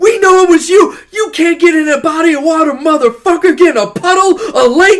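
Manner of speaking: shrill, booming, very loud, high screaming rant. Speaker retells a scene where a hammerhead shark rants: retelling Samuel L. Jackson's screaming rant. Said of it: "and he's just screaming".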